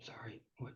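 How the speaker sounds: muttered whisper.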